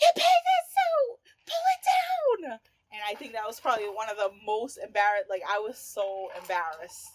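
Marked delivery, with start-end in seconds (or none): 0.0-2.6 shrill, very high, very loud screaming. Retelling an embarrassing bikini moment, imitating her mother screaming. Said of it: "And my mother screaming".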